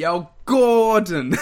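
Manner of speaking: put-on assumed Italian American accent. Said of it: "You have to be like".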